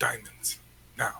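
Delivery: most menacing, threatening voice he can manage. A player's character, blocking the door with a rapier, speaks as threateningly as he can muster. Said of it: "in as threatening a voice as he can muster".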